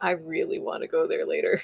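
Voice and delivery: low, hushed whisper under the breath. In a roleplay scene, telling another character something in a low voice. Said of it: "in a low voice to Rain".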